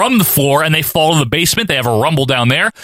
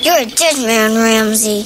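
put-on little kid's voice; 6 semitones higher than usual. Recapping a movie, the speaker quotes the Undertaker's line, little kid's voice. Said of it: "in a nice little kid's voice".

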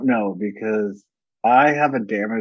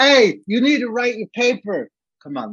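mock very high, raised-voice shout; 12 semitones higher, 4 dB louder than usual. Acting out how someone would yell at them, imitating someone yelling. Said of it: "if someone's yelled".

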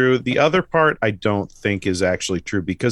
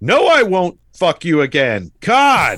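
loud, high, very slow, drawn-out mock delivery; 6 semitones higher, 5 dB louder than usual. Retelling a movie scene where the guy answers her: imitating a loud retort. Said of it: "he says it really loud".

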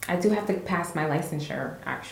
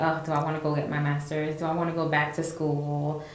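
normal talking voice

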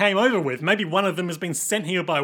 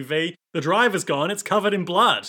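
ordinary delivery

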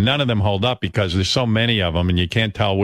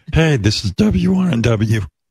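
strained choking puppet voice, higher; 4 semitones higher, 3 dB louder than usual. Imitating how one's own voice once sounded: Kermit choking voice. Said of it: "I sounded like Kermit choking on a cock".

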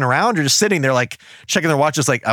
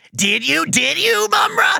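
put-on very high, drawn-out, creaky, excited child voice. Retelling how a mutant asks Mumra a question: imitating an excited kid voice. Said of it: "he goes".

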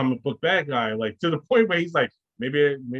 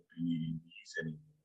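very low, hushed, quiet, menacing villain voice; 8 semitones lower, 16 dB quieter than usual. Describing a movie line, showing how a typical bad guy would say it menacingly.

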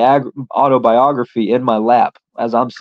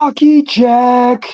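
high, drawn-out yell. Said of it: "he yells out".

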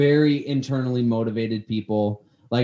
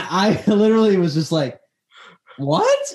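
ordinary talk

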